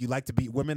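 quiet whispered voice. Retelling what one fighter said to the other mid-fight: imitating someone whispering. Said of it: "he whispers in the".

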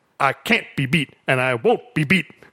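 robotic delivery, both halves exactly identical. Retelling a TV interview line: imitating Mister T's robotic delivery. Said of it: "says both parts the exact same way".

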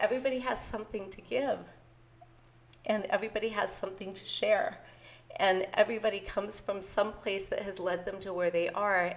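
choked-up, moved, emotional delivery full of feeling. Podcast host explaining why they started the podcast, getting emotional. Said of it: "I'm getting emotional".

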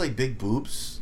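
boobs stressed, drawn out and slow.

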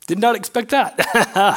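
getting emotional, choked up.

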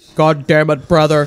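deep, serious monotone voice. Quoting a movie character's line after praising his very deep voice: Ken Foree impression. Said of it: "Let's not forget his voice".

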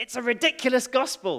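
really loud, high, big emphatic exclamation. Retelling what Dale said at the prayer meeting: imitating a really loud voice. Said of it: "in a really loud voice".

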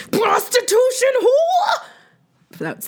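very high shriek, put-on non-Jersey accent. Recounting a scene where she lifts a heavy table; retelling a scream. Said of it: "in a not New Jersey accent".

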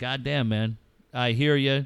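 ordinary delivery

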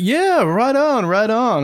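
put-on Canadian accent. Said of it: "I apologize for the Canadian accent".

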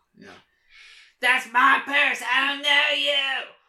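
very high, loud, badly done put-on voice. Taking a turn at doing voices, the speaker tries an impression. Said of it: "I guess I have to try now".

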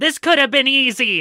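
put-on very high, squeaky, small childlike voice. Voicing a small child holding a sword: child character voice. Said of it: "the literal child goes".

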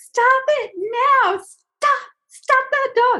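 piercing, very high, frantic, drawn-out screaming. Retelling being at the fence yelling about a dog; retelling frantic screaming at a dog.

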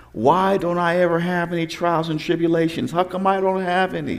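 high-pitched, tearful, bawling crying voice. The speaker retells his sister bawling to their mom in the kitchen, imitating someone crying. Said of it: "she's crying".

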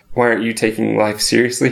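ordinary talk, nothing marked

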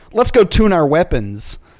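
ordinary talk, nothing marked

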